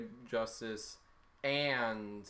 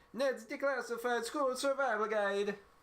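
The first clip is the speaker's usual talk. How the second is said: put-on Italian accent pitched very high; 12 semitones higher, 3 dB louder than usual. Asked by a co-host to say a show title in an Italian accent. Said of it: "Say it in an Italian accent".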